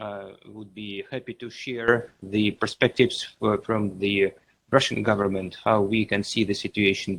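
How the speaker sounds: very soft, hard-to-hear speech. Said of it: "could you speak a little louder".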